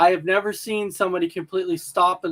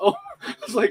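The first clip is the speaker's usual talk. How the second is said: plain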